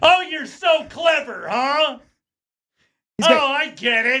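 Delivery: furious ranting, shrill, pitched very high. Retelling how a man who couldn't finish the clues raged, imitating someone raging. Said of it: "Just raging at Will Shorts".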